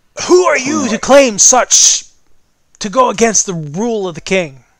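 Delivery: shouted, demanding voice. Narrating a scene, the storyteller voices an unseen speaker, yelling. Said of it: "Yells the voice".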